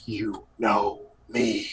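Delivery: seething angry half-whisper, right up close. A voice speaks right against the listener's ear in a dream: angry half-whisper. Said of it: "it is an angry whisper".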